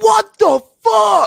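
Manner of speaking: raw, raspy scream, very high and very loud. Recalling a draft pick, the speaker reenacts screaming at the TV. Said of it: "I was screaming at the T V like".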